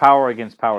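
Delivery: ordinary delivery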